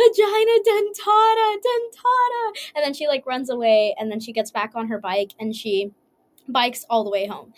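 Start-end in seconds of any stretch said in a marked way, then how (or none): 0.0-2.5 very high, loud, shrieking cry. Telling a story, voicing the injured gynecologist, retelling a yell. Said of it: "and he's yelling".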